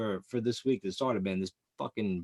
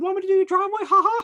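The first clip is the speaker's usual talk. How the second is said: squealed very high and loud; 9 dB louder than usual. Retelling a high school kid offering to do his driveway, in a Mickey Mouse voice. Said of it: "he sounded like Mickey Mouse when he talked".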